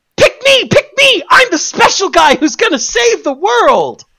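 very high, show-off mock screaming squeal. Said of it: "his fucking design screams".

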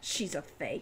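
scornful, contemptuous, breathy whisper. Wren answers Al from up in a tree, scornful. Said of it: "Wren said scornfully".

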